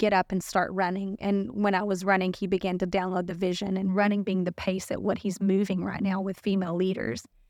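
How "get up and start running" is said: usual speaking voice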